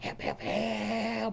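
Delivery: quiet, soft speech. Showing how they'd sometimes call for help quietly: quiet call for help. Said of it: "sometimes I'd just do it kind of quiet".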